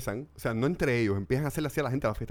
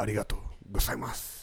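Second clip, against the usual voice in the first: put-on Spanish-accented actor voice, lower pitch; 4 semitones lower, 4 dB quieter than usual. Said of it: "hazlo con la voz de Antonio Banderas".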